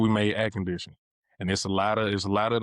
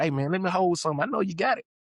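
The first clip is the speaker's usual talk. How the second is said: casual, playful, pitched-up joking banter; 10 semitones higher than usual. Showing how they would joke when asking to borrow something. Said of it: "just playing and joking like how we talk".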